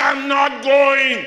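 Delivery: high, loud, slow vexed shout. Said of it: "She was vexed".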